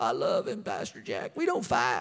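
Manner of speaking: very low, deep put-on Southern accent. Acting out a married person talking to Pastor Jack: southern accent. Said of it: "I don't know why I have a southern accent right now".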